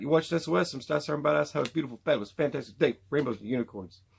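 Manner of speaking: rapid-fire fast talking. Signing off the video: fast talking like the Micro Machines guy. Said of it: "Gotta say it all fast like that, like that Micro Machines guy".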